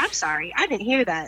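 automated phone-system recording robot voice. Imitating an automated phone line that misheard an order: robot voice. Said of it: "some, like, auto robot".

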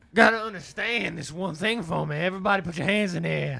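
loud, sermon-style preacher calling out. Declaring himself a preacher and calling out to everybody, in a preacher voice. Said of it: "That's a good preacher voice".

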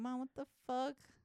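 put-on yelling. Acting out a reply to mom about a suitor: imitating yelling at mom. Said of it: "I'd be yelling at my mom".

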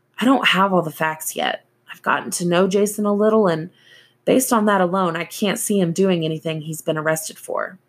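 plain

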